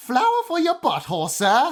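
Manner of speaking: fake London accent, very high pitch, swooping intonation. Giving a favorite out-of-context quote from the episode, in a put-on London accent. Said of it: "excuse my accent here".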